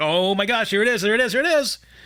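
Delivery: mock giddy, eager, excited, repeated exclaiming. Retelling waiting for a food order at the counter: imitating own excitement. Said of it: "excited. I was like".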